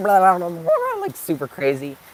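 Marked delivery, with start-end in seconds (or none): 0.0-1.0 high, loud, hyper blabbering. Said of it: "I was a bit more like".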